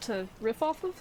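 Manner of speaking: riff off of drawn out slowly, questioning rise.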